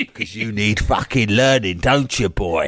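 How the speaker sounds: rough, gruff cockney voice, dropped very low. A magic football answering the boy's question, in a gruff cockney voice. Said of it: "talking to him in a gruff cockney voice".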